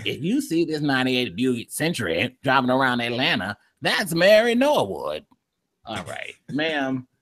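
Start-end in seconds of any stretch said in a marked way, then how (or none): 0.0-5.2 put-on elderly woman voice, much lower. Mocking a woman's video that features an old woman, imitating an old woman's voice. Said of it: "she's got this old voice like this".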